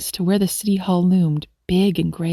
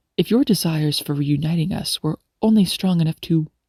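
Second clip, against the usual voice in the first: ordinary delivery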